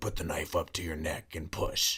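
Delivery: eerie, sinister, hushed, creepy voice. Describing what a thing on FaceTime would say, in a creepy voice. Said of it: "in this like creepy voice".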